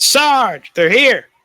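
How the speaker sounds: very high, loud shouted call. A soldier steps back and yells to his sergeant: yelling out. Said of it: "he yells out".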